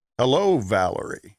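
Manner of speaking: very syrupy, sugary, laid-on sweetness. Imitating how a man greets her on speakerphone, in a syrupy voice. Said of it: "what you get in the most syrupy of sounds is".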